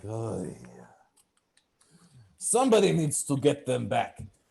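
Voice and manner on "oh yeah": very quiet, hushed, sighing delivery. Voicing a character who sighs before answering: sighing in character. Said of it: "he sighs like".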